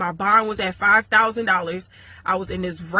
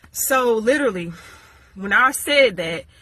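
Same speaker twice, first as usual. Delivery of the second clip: ordinary delivery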